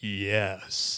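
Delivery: big, deep, low baritone. Quoting how Ligon Duncan would answer his own question, in his big baritone voice. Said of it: "big baritone voice".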